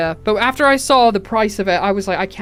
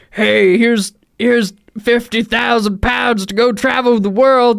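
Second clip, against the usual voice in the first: put-on old man voice, much slower; 3 dB louder than usual. Imagining an old man offering travel money, in an old man voice. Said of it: "old man being like".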